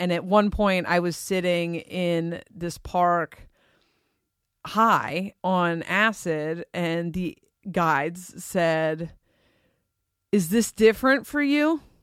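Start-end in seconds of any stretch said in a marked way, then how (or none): 10.3-11.8 teasing, slightly mocking tone, pitched up. Retelling what the guides asked while high in the park, imitating a mocking tone. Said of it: "they said it kind of mocking".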